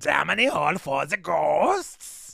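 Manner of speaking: half-working, rough, creaky put-on creature voice. Retrying a line on the New York Mystery Machine Christmas ride; Krampus voice. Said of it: "I'm trying to do the Krampus voice".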